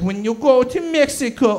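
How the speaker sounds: terrible, botched fake Portuguese accent. Quoting their family's warnings at the wedding, in a terrible Portuguese accent. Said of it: "that's a terrible Portuguese accent".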